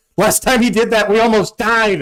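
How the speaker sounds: very high, panicked, squealing voice. Imitating another player's worried reaction in the game: imitating Zane's panicked voice. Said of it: "I heard the panic in Zane's voice".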